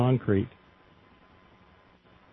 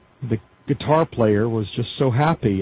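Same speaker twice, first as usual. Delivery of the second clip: plain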